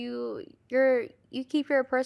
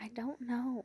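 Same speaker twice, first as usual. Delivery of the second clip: soft, unvoiced whisper. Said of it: "Why are you whispering?".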